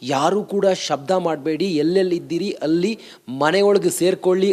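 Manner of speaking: plain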